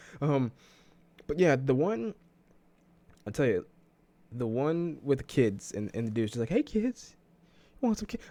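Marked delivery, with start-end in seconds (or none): 6.5-8.3 very high-pitched voice. Speaker acts out a man in a clip calling to kids; Herbert voice. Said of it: "I gave him Herbert's voice".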